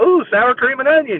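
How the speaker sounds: giddy, overeager, high, excited dog voice. Voicing a dog eating toenails off the floor: imitating an excited dog. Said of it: "That is what it sounds like".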